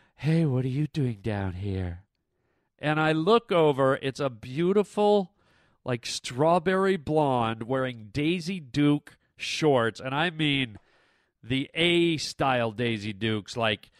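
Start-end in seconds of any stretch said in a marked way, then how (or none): 0.2-2.0 low, seductive, alluring voice. Retelling what a woman under the bleachers said: imitating a sexy voice. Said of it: "this beautiful, sexy voice".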